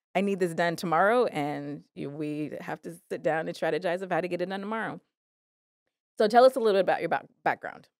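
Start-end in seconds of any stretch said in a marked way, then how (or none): none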